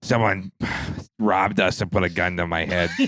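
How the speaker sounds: put-on woman's smoker's voice. Retelling what a short woman up front said, imitating her smoker's voice. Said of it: "she had like a smoker's voice".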